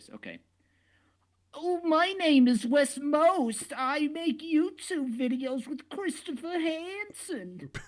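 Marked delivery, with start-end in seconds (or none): 1.5-7.7 very high, very slow, drawn-out put-on voice. Imitating Wes, who is on the call: Wes impression. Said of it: "let me try to genuinely do a Wes voice".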